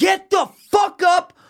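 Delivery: shrill, very high, drawn-out scream. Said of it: "And I just scream".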